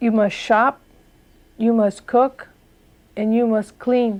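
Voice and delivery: put-on stern, firm voice. Retelling what he said when he became stern: imitating a stern, firm voice. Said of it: "he became a little stern".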